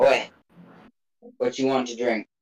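put-on rough-edged, gruff old tavern keeper voice. Storyteller voicing a character asking what the party wants to drink, gruff voice. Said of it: "In a gruff voice".

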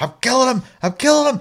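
shrill, very high yelled shout. Retelling a teammate jumping onto another boat: imitating someone shouting. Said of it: "Shouting at us to bring".

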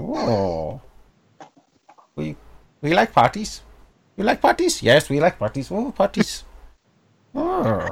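small creature voice, swooping and slow. Speaker voices a small creature character: small creature accent. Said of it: "I'm trying to do a small creature accent".

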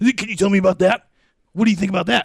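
very high, loud, rapid talk-radio host voice. Retelling a radio call, doing a Rush Limbaugh impression. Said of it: "I used to do a Rush Limbaugh".

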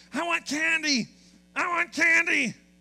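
high, loud, drawn-out tantrum scream. Telling a story, act out a child who wanted candy from his mom, imitating someone screaming. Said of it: "He began to scream".

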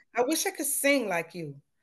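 ordinary delivery

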